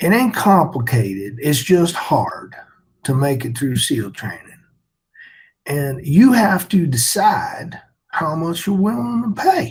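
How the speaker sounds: put-on deep Southern accent, swooping. Quoting a seal training instructor from first phase: imitating a deep southern accent. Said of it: "talked with a deep Southern accent".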